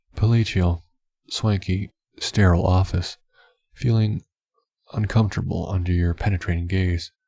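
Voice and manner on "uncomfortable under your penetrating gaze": ordinary delivery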